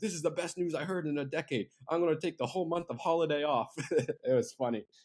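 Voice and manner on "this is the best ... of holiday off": put-on German accent, pitched up. Retelling a friend's voice-note reply to good news, imitating Andreas's German accent. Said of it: "like in a in a German accent".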